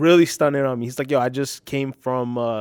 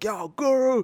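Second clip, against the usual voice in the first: imitated scream, higher; 11 semitones higher than usual. Retelling calling out to guru while waiting for the train: imitating own scream. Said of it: "I just screamed".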